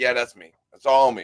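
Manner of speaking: ordinary talk, nothing marked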